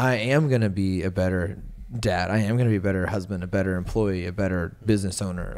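ordinary talk, nothing marked

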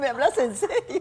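high-pitched disbelief spoken through laughter.

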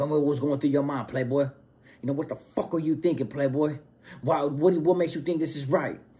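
acted, condescending, aggressive, relentless badgering tone. Retelling how a leader questioned members at the table: imitating someone aggressively questioning. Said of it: "aggressively question".

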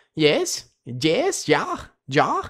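goofy put-on Polish accent, Russian-tinged and swooping. Speaker tries out a Polish accent that is really his Russian one: silly Polish accent. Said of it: "my Polish accent will just be my Russian accent".

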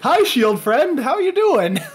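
Canadian character voice. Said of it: "your character is so Canadian".

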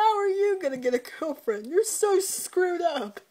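loud, high taunting through big laughter. Retelling what a man said while laughing at someone, imitating someone laughing hard. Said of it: "Just laughs his ass off".

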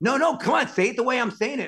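very high, shrill, insistent yelling. Retelling how a man at a shoot pushed him on a line: retelling someone's yell. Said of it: "after he starts yelling at me".

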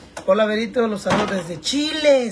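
ordinary talk, nothing marked

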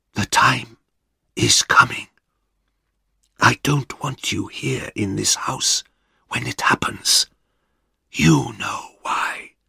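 soft, close whisper right at the ear. Reading a story, the husband speaks close to his wife's ear: whispering. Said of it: "spoke in a whisper".

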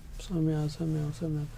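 tired, lifeless, low, very quiet, spiritless voice. Speaker demonstrating how some people do their voice exercises: tired, spiritless voice. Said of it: "they do the exercises like this".

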